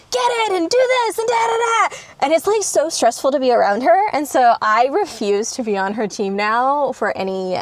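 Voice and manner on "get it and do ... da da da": acted very high, frantic, full-lung screaming. Retelling a family game with mom: imitating mom screaming. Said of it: "screaming at the top of her lungs".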